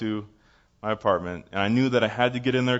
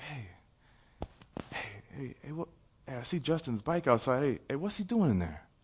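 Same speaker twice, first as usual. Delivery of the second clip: hushed, curious half-whispering; 2 semitones higher, 10 dB quieter than usual. Retelling what people said, heard through the wall: imitating people half-whispering. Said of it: "I hear people whispering".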